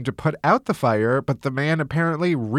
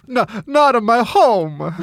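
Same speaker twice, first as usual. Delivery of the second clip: fake Italian accent, loud, slow and drawn out; 6 semitones higher, 5 dB louder than usual. Imagining bees dismantling their beehive, voicing an italian bee: put-on italian accent. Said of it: "That's my impression of an Italian bee".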